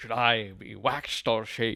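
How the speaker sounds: put-on sassy character voice. Playing the Grinch on request, Jim Carrey's Grinch voice. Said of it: "that's pretty good".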